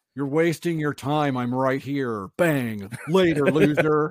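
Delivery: loud, big, slow, drawn-out cocky tone. Joking about a movie star's self-belief: Nick Cage impression. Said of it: "That was my Nick Cage impression".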